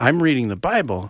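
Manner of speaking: usual speaking voice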